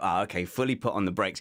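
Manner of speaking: usual speaking voice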